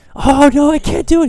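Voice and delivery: very high, loud, panicky cry. Recounting Mr. Miyagi coaching his student, speaker does a panicky Daniel LaRusso impression. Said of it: "He's all panicky and everything".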